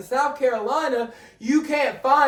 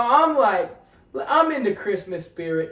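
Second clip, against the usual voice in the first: usual speaking voice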